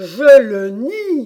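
very loud, forceful yell. Narrator reads one character flatly contradicting another: shouted. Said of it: "cria le lièvre".

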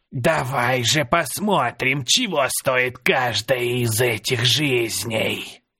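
put-on words spat out in a hiss, old crone voice. Narrator voicing a woman at a campfire speaking to him, hissing. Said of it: "прошипела".

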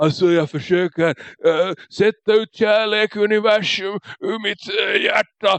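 put-on heavy, drowsy, sedated-sounding slurred speech. Describing a movie scene where Martin Lawrence comes in, imitating his slurring. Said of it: "sluddrar som han är på liksom 5 olika sömmediciner".

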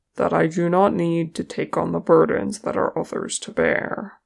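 plain reading voice

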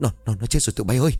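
trembling, shaky, quivering, quavering voice. Reading a character's startled line after checking a body, in a trembling voice. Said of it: "giọng run rẩy".

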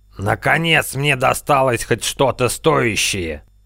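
forced out between clenched teeth. In the middle of a fight, Adreks speaks: through gritted teeth. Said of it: "Сквозь зубы процедил".

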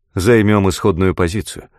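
ordinary delivery, nothing marked

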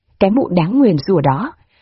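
plain reading voice

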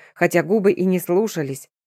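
ordinary delivery, nothing marked

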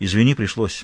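ordinary delivery

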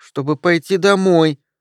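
put-on tiny, thin, high little-girl voice. A narrator reads a little girl answering her mother, in a thin little voice. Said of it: "тоненьким голоском произнесла девочка".

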